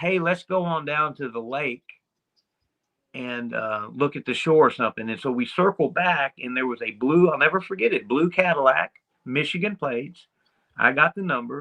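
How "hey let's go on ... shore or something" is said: ordinary talk, nothing marked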